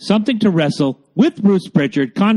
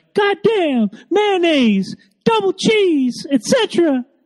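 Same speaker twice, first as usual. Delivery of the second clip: very high-pitched, slow, stretched-out, drawn-out outburst; 13 semitones higher than usual. Telling someone about their impressions, then a Jim Cornette impression. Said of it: "whenever you break out the Jim Cornette impression, you're like".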